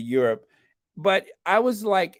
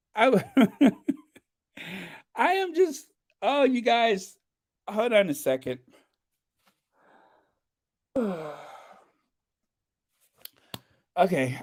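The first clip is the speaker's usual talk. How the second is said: overwhelmed with emotion, speaking slower; 5 semitones higher than usual. Podcast host thanking the listeners, overcome with emotion. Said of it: "I have to take some deep breaths".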